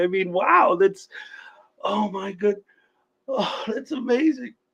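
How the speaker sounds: emotional, choked-up, halting stammer, breaking off. Thanking a guest for a compliment, mock getting choked up. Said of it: "I'm kinda getting choked up over it".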